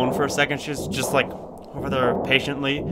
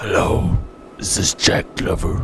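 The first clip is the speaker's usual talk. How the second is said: deep dark tone, lower pitched; 6 semitones lower than usual. Phoning to ask for Jack Glover: deep, dark voice. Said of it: "a deep, dark voice".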